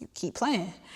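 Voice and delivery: laughing, mocking demon voice full of scorn. Retelling how a demon laughed at the speaker: imitating a demon laughing. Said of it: "the demon was literally laughing at me like".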